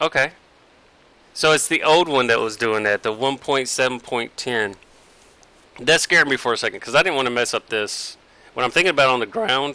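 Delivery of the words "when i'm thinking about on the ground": voice breaking, going higher. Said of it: "My voice cracked right then".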